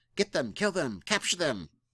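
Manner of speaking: squeaky, rasping, high goblin yells. A storyteller voices goblins shouting at the players, raspy, squeaky goblin shouting. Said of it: "in their their raspy and squeaky voices shouting".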